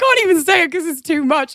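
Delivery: crying with laughter. Telling an embarrassing school story, laughing to tears. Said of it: "I'm, like, crying".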